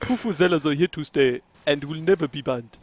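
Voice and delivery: mocking put-on South African accent. Mocking a quoted speaker's accent: imitating Rich Mukondo's South African accent. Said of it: "mock his accent a little bit".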